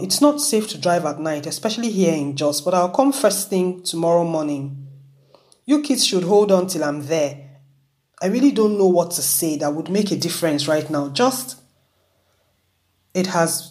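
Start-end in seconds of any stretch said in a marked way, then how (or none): none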